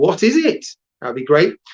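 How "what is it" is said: puzzled, curious, clueless voice, pitched up. Showing listeners how to say a line from the story, curious, have-no-idea voice. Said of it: "say in your best kind of curious, I have no idea what's going on voice".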